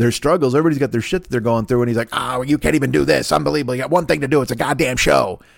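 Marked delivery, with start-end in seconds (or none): 2.1-5.4 angry, totally fed-up rant in a put-on voice. Acting out the inner voice that looks like J. Jonah Jameson. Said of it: "that impression".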